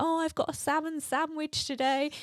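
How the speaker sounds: high shout calling out from a distance. Retelling a group bike ride, retelling Becky shouting from the back. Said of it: "at the back shouting like".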